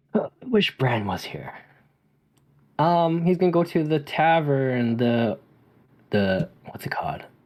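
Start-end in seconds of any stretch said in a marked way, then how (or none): 0.1-1.5 grumbled half to himself, muttered under the breath. A player says what his character will do next, muttering under breath. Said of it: "he's going to mutter under his breath".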